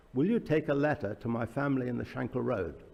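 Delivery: ordinary delivery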